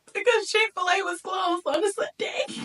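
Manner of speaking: mock sobbing lament, high and loud.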